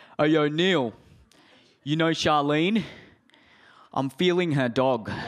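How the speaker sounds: put-on Australian accent. Quoting how he actually said it, the speaker uses an australian accent. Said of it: "it sounds really wrong with the Australian accent".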